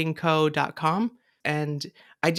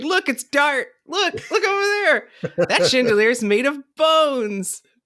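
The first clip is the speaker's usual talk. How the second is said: put-on, very high, loud calling voice; 10 semitones higher, 5 dB louder than usual. Describing pointing things out to a companion at Halloween Horror Nights, retelling speaking loudly. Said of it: "speaking loudly and going".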